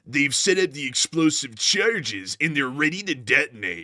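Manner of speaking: dramatic docudrama narrator voice. Joking with a co-speaker about voices, imitating that United 24 guy. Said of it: "I'm gonna talk like that United twenty-four guy".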